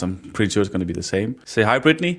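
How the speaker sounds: ordinary delivery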